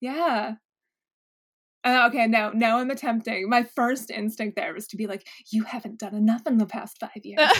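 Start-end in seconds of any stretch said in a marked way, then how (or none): 5.5-7.5 harsh, mean, critical voice. Acting out the first instinct of an inner critic: voicing a harsh inner critic. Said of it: "that internal critic who's just, uh, always a big jerk".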